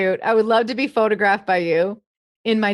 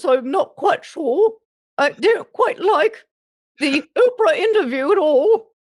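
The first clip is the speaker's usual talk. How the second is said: high, slow, royal-sounding voice; 7 semitones higher than usual. Answering a request to do the Queen of England: Queen of England voice. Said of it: "the Queen of England is kind of like this".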